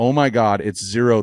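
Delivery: normal talking voice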